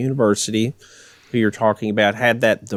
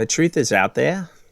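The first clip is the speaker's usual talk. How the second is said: terrible put-on British accent, old sailor voice; 4 semitones higher than usual. Asked how a british accent would sound, bad british accent. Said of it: "that sounds like a Hobbit".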